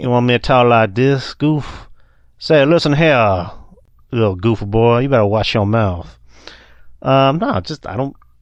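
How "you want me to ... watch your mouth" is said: over-the-top, exaggerated Texas accent. Asked if they should talk like this the whole time, answering in an exaggerated Texas accent. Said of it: "Not everyone from Texas has an accent".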